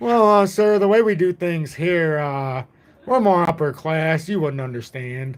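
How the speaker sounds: acted-out haughty, snobbish, condescending talking-down delivery. Retelling how a man talked down to him, mock-condescending imitation. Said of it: "that's how he talked to me".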